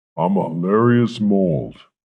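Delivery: loud, comical, processed and altered voice effect. A mold introduces itself, in a funny altered voice. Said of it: "you have a funny voice".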